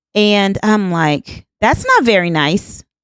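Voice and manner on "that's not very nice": steady, self-assured, confident, firm tone. Retelling a reply to a man who was being rude: retelling a confident reply. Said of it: "I said that with confidence".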